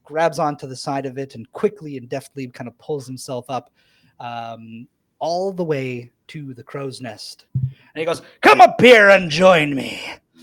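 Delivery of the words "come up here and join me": very loud, swooping call. Voicing the man in the purple top hat from the crow's nest: calling down from above. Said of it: "He calls down".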